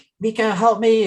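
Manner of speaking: screamed, desperate plea. Retelling a scene where she calls for help: imitating someone screaming. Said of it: "they're screaming and she's like".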